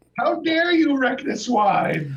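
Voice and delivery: high, loud, slow outraged wailing shriek.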